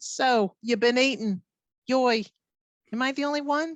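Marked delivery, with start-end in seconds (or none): 0.0-2.3 Yiddish-inflected accent.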